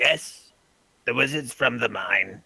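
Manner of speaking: wet, gurgling, bubbling voice. Voicing a voice heard in a player's head, answering their question, gurgly voice. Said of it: "you hear a gurgly voice in your head".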